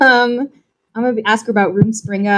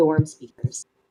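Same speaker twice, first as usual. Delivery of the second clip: soft mutter under the breath; 6 semitones lower, 6 dB quieter than usual. Speaking in character to a halfling, adding a name quietly: said under the breath. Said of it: "kinda under my breath".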